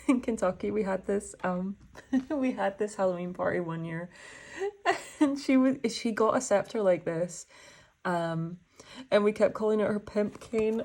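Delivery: talking through bursts of giggly laughter. Recalling a friend's Halloween party scepter, laughing while talking. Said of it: "I'm laughing because I just remembered".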